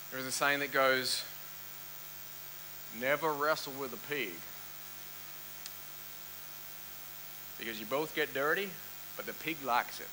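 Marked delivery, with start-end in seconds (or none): 3.0-10.1 soft, slight put-on southern country accent. Quoting an old saying to listeners: put-on southern country accent. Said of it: "I feel like I kind of have to put on a bit of a southern country accent".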